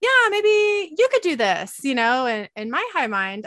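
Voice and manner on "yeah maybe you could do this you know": mock very high, loud, sing-song, playful half-joking tone. Retelling what a woman said about a boy-or-girl reveal: imitating a joking suggestion. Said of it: "kind of jokingly like".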